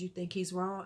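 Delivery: hushed, soft, quiet voice, very close. Retelling what a little girl asked after class: imitating someone talking quietly. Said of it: "she's talking really quietly".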